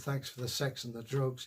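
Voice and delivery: ordinary talk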